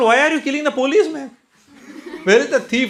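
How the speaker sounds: high, fast, laughing disbelief. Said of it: "I said".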